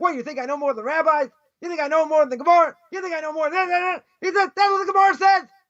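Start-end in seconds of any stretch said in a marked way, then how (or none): 0.0-4.0 put-on heated, worked-up screaming rant. Retelling how a man started screaming at him, reenacting the screaming. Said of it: "and he started screaming at me".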